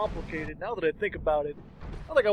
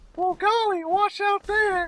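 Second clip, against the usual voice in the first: put-on very high, squeaky young boy voice; 13 semitones higher than usual. Making fun of a game's voice acting, the speaker mimics a kid met underground, imitating a kid character. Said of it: "and there's this kid, and he's like".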